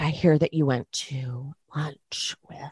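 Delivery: put-on stage whisper. Retelling how Dorit spoke to Diana: imitating Dorit's stage whisper. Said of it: "stage whispers to Diana".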